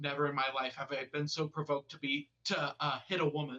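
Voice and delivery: ordinary talk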